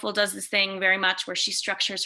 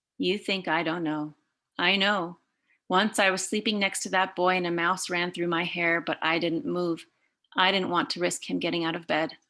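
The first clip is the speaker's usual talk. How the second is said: ordinary talk, nothing marked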